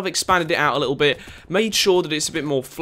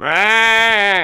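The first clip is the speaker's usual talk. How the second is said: loud, drawn-out, high, terrible sheep bleat on aah; 5 semitones higher, 7 dB louder than usual. Speaker describes thousands of farm sheep inside their base: terrible sheep impression. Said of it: "that was a terrible sheep impression".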